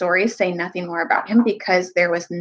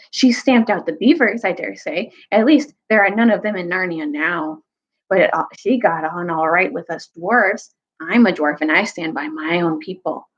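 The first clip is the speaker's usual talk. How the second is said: ordinary delivery, nothing marked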